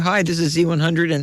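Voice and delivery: ordinary delivery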